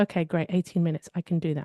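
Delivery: plain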